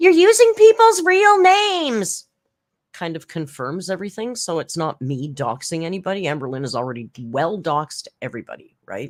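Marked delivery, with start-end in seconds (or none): 0.0-2.3 high, loud, drawn-out screaming. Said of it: "Amberlynn's screaming".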